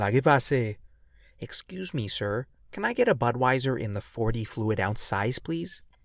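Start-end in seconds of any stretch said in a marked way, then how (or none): 1.4-5.8 exaggerated polite put-on voice.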